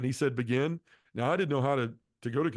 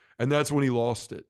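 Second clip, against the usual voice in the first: ordinary talk, nothing marked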